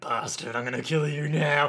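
seething, angry muttered words. Retelling a character's line while recapping a scene: imitating angry muttering. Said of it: "he's getting really angry and he's muttering".

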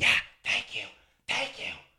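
low stage whisper pushed far too loud. Retelling a venue manager's phone call in a booth: imitating a loud shout-whisper. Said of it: "still talking so loud".

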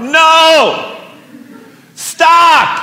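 mock very high, loud, drawn-out dad shout. Showing the dad voice he used to stop her, retelling a loud dad yell. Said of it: "I gotta move this away because it's loud".

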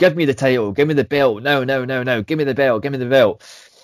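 put-on frantic, insistent screaming, repeated. Retelling what she screamed into the microphone over the title, imitating someone screaming. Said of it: "Eva is screaming into the microphone".

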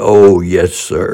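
put-on proud little boy voice. Retelling a little boy's answer about quitting bad words: imitating a proud little boy.

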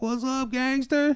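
very high, pumped-up, jazzed-up voice. Retelling how the sponsor answered the phone: imitating someone jazzed up. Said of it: "He's in a good mood".

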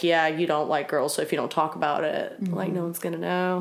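plain

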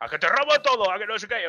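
mock yelling. Recounting a scene where one guy starts yelling at another, retelling a shout. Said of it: "el otro le empezó a gritar".

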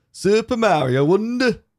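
very high, put-on Yorkshire accent. Asked to say the game's title another way, saying it in a yorkshire accent. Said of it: "say it in the Yorkshire accent".

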